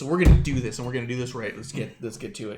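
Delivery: mock emotion-thick, choked-up voice, holding back tears. Retelling Beth's speech at the opening of NXT: imitating Beth choked up. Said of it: "choked up and she goes".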